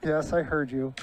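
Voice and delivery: plain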